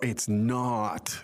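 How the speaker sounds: ordinary delivery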